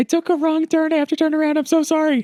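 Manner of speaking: shrill, very high yell. Retelling how a lady yelled out the window near a horse trailer, retelling a lady's yell. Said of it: "I hear a lady yell out the window".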